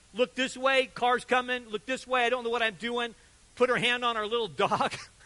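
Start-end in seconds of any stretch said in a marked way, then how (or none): none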